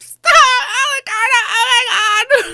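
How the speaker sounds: very high, loud, crying, pleading sobs. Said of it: "Justine starts crying".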